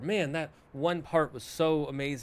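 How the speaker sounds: ordinary talk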